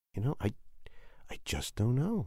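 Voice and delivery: hushed, soft, unvoiced, unsure whisper.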